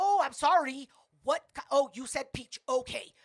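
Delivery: mock haughty attitude. Retelling what a rude waiter said: imitating a waiter's attitude. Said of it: "Like, attitude".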